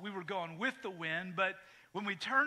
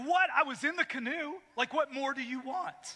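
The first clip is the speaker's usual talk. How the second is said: put-on indignant, offended, affronted disbelief, pitched up; 6 semitones higher than usual. Retelling a reply to a friend's dad's remark: imitating offended indignation. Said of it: "I was just so offended".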